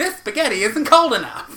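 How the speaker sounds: put-on Italian accent, pitched way up. Insisting an earlier bit was an Italian voice, the speaker does it again: put-on Italian accent. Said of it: "That was my Italian voice".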